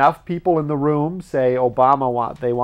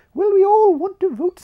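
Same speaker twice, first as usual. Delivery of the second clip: put-on posh British accent with much higher pitch; 4 dB louder than usual. Acting out what the townspeople answered about voting at midnight, the Queen impression. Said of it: "that's the Queen".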